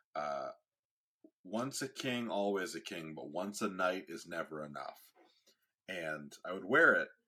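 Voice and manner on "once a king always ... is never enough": ordinary talk, nothing marked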